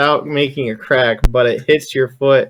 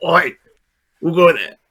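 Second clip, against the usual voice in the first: orc character voice; 3 semitones higher than usual. Voicing an orc guard who hears a creak: orc voice. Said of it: "the orc s-, turns around and he goes".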